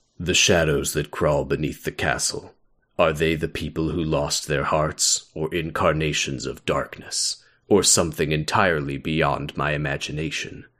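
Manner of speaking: deep, dark scholarly voice. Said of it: "do I wanna do an Ansem voice".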